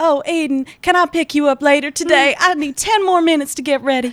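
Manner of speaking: put-on high Southern belle accent. The speaker imitates how the listener sounds in their head: southern belle accent. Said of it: "You would be a southern belle".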